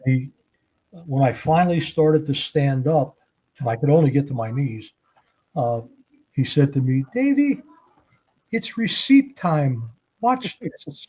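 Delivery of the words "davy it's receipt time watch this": very high, squeaky little voice. Retelling what a dangerous guy told him, imitating a squeaky voice. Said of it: "had a really neat kind of squeaky voice".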